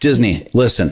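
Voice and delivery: pretend forceful, aggressive tone. Speaker confronting Disney: mock aggressive. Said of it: "He's speaking very aggressively".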